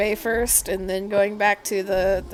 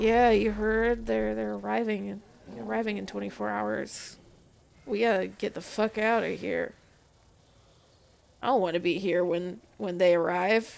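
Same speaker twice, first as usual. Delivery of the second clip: very quiet hushed voices, even quieter; 5 dB quieter than usual. Voicing guards murmuring by a wall: guards talking very quietly. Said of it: "They're talking to each other very, very quietly".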